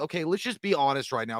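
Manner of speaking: normal talking voice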